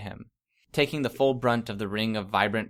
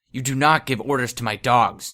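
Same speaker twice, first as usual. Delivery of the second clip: raised, menacing growling voice; 2 semitones higher, 6 dB louder than usual. Reading a story aloud, a woman speaks into the narrator's ear, growling. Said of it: "she growled in my ear".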